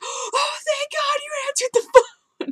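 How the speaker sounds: mock yelled outburst, pitched very high. Retelling what she yelled when he finally answered the phone, retelling a yell. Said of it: "I literally yelled".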